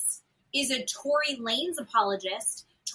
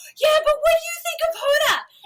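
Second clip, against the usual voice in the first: very high-pitched, loud scream; 6 dB louder than usual. Retelling shouting a question from a car window: imitating own screaming. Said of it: "And I'm screaming".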